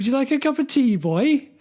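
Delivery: put-on Welsh accent, very high. Urged by another speaker to have it again, line in a Welsh accent. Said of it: "in a Welsh accent".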